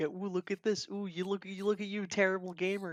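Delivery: high, smug, gloating schoolyard-style jeer. Imitating a smug fan taunting other players: imitating a smug taunt. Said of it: "hang my like of Bloodborne of people's heads like".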